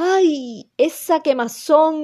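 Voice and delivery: pained cry, long high drawn-out ay. Reading the tiger as the melted paste burns his eyes, roaring cry. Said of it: "empezó a saltar y a rugir otra vez".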